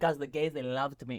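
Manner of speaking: put-on slight, light Greek accent. Retelling what dad, a Greek tailor, said: imitating dad's slight Greek accent. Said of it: "with a little accent".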